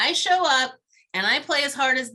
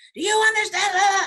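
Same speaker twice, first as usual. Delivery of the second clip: mock heated, high-pitched shouted screaming; 9 semitones higher, 4 dB louder than usual. Speaker retelling a man at the fence screaming at him: imitating someone screaming. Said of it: "he's screaming".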